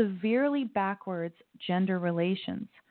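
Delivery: ordinary talk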